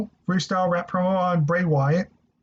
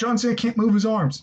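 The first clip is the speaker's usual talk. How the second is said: normal talking voice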